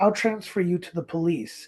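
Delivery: plain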